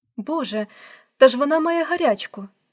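loud, frightened, alarmed cry. A mother finds her daughter in front of the mirror: frightened exclamation. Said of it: "перелякано вигукнула мама".

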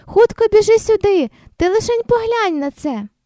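very high, hollering call. The parents call their daughter Nastya over, calling out. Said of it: "загукали батьки".

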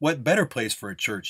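ordinary talk

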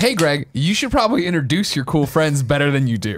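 ordinary talk

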